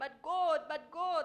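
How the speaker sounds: very loud, high, drawn-out, wailing crying. Giving a performer feedback, imitating their plea to god: imitating a high-pitched crying plea. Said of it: "that part where you cry".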